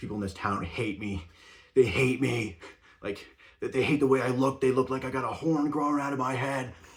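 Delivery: loud, really annoyed, fed-up, aggrieved griping rant. Retelling how a coworker complained about people in town: imitating a really annoyed coworker. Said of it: "really annoyed".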